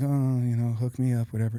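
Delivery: put-on defeated, resigned tone with a sigh. Retelling how a mother arrived for chemotherapy: imitating a defeated, resigned tone. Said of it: "my mom was already defeated".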